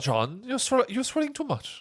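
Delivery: bad put-on Irish accent, very high and swooping. Acting out someone's line from a story, in a bad Irish accent. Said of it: "lamest Irish accent I've ever heard".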